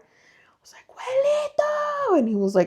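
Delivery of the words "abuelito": acted-out shrill, piercing, very high, loud scream. Retelling waking someone at night: imitating a loud scream. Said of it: "I screamed for my abuelito so freaking loud".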